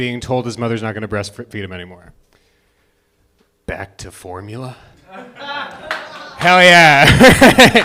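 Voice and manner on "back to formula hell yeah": high, swooping, very slow villain drawl, every word stretched. Doing an impression of Willem Dafoe's Green Goblin as a baby: Willem Dafoe as Green Goblin. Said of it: "Is Willem Dafoe as the Green Goblin".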